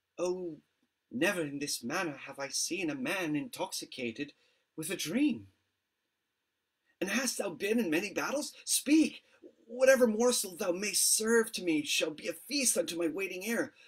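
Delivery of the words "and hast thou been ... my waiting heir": all eagerness, excited and pressing, pitched up. In a drama, a man eagerly asks the man in his employment about his battles.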